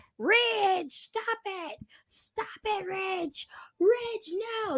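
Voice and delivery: mock very high, stretched-out, drawn-out shrieks. Retelling how a wrestler kept yelling at another wrestler: Thea Hale screaming. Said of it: "Thea Hale was just screaming at him".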